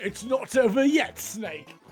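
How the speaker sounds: mock British accent. Speaker mimicking the British guy who says a line she repeats constantly, mock British accent. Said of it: "the guy that says it is British, so I always make fun of him".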